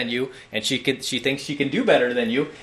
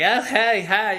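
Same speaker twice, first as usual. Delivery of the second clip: light, pitched-up, put-on girlish voice; 9 semitones higher than usual. Explaining how he sometimes mimics girls, mimicking girls' voices. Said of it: "mimic girls sometimes, like I do".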